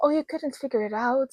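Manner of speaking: mock-pitying voice. Retelling how a woman reacted to a scarf, in a mock-pitying voice. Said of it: "said in this pity voice".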